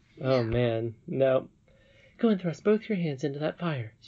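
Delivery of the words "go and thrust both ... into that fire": quick, hasty, hurried, pitched-up voice. Reading a story aloud, the narrator voices a woman's command, quickly, almost hurriedly. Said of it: "she said quickly, almost hurriedly".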